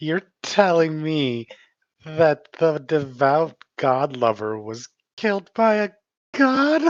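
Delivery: cackling laughter while talking. Voicing Moira mocking a dead god lover: cackling with laughter. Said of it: "And just cackle laughing".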